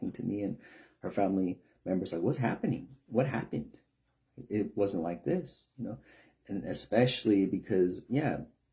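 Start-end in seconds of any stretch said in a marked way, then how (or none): 2.2-5.7 fed-up, exasperated, very angry delivery. Retelling her reaction to how youth treat elders: imitating someone angry. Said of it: "very angry. She's like".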